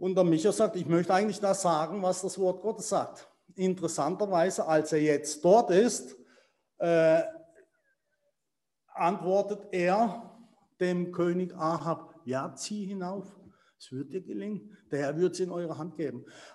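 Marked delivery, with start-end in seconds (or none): 12.2-16.3 soft, quick, a bit sarcastic. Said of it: "das sagt er so ein bisschen sarkastisch".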